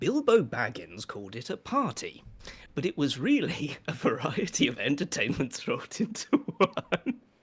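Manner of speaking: speaking aloud while repeatedly breaking into laughter. Reading a passage aloud on camera, laughing while reading. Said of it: "You're laughing".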